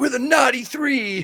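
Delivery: high, shouted hip hop crew hype. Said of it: "a hip hop group or something".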